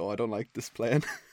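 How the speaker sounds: whimpering voice. Acting out a character reacting to the robbers' plan: put-on whimper. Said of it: "Lucius then whimpers".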